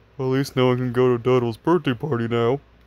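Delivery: put-on low stuffed-toy voice. Narrator reading a story aloud, voicing a character's line: deep teddy bear voice. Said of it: "Naughty said in a deep teddy bear voice".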